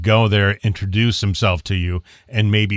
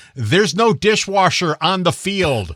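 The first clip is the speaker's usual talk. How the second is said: very high, heckling shout; 10 semitones higher than usual. Telling the others how he shouts at a referee on screen; retelling a yell at the tv. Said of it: "the whole time I'm yelling at the screen".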